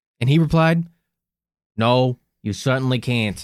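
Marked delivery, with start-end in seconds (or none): 1.8-3.4 put-on Boston accent. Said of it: "as we sit here and mock his accent".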